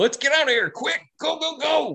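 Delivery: very high, frantic screaming. Voicing a tied-up dog character mid-battle: tied up and screaming. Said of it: "tied up and screaming, just says".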